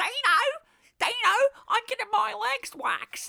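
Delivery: very high, blaring, shrill Australian radio co-host voice. Mocking the woman on a breakfast radio show: Australian breakfast radio co-host voice. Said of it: "And then the woman will be like".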